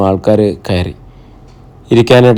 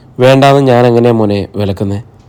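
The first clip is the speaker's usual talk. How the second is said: ordinary delivery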